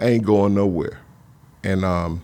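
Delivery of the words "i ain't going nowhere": ordinary talk, nothing marked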